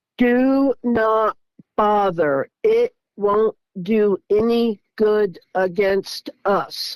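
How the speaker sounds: very slow, precise, robotic, computer-like, each word spelled out. Speaker retelling words they heard, said very slow and very precise. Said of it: "they said it very slow and very precise".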